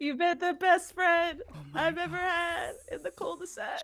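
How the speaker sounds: high-pitched, sobbing, crying through every word. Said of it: "I just sob".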